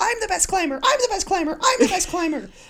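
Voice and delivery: mock very high, insistent cry repeated over and over. Describing a scene where everyone yells, the speaker re-enacts a character screaming. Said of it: "she just keeps screaming".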